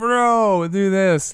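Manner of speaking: high-pitched mild mock yell.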